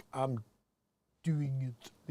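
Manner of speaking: very quiet, low, hushed put-on French accent. Quoting a man's words the way he said them; french accent. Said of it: "with his French accent".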